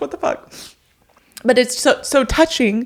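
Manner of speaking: tearful speech. Telling a listener about a touching dedication, the speaker is tearful, crying while talking. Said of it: "I can't believe I'm crying this much".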